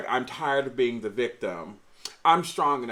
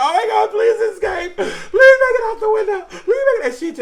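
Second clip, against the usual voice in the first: acted-out tearful bawling, much higher, louder; 13 dB louder than usual. Speaker recalls watching a girl terrorized in a movie, retelling bawling pleas. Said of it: "I was literally bawling like".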